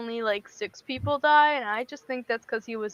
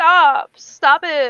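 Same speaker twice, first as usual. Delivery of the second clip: very loud, exasperated, annoyed tone; 3 semitones higher, 9 dB louder than usual. Retelling a skewered character's reaction to being hit: imitating an annoyed "stop". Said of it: "you sound like you're annoyed".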